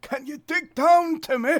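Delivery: put-on very high, shrill, very loud elderly man voice. Recapping a bit where Simon does his patented old man voice: old man voice. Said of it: "Simon does his patented old man voice".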